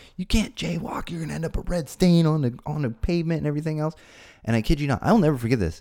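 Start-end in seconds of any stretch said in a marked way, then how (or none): 0.2-3.8 put-on yelling, higher pitch. Retelling how a sheriff yelled at jaywalking boys: imitating a cop yelling. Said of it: "Starts yelling at us".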